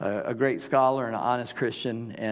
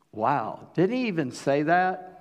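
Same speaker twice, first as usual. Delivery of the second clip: ordinary delivery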